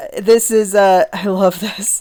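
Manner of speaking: stifled laugh breaking through mid-sentence. Talking through old science-fiction magazines, trying not to laugh. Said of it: "I'm trying not to laugh".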